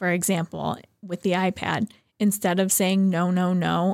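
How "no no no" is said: plain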